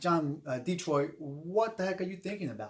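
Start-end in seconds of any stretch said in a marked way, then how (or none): none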